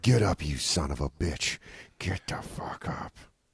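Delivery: whispered action-movie hero delivery. Describing getting up after a fall: acting like an action movie hero. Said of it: "you're like in an action movie".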